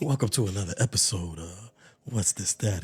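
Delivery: very low, hushed late-night radio host voice. Opening another podcast episode, in a late-night radio voice. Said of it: "got the late night radio voice".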